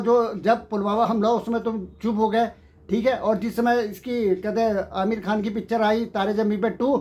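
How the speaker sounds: usual speaking voice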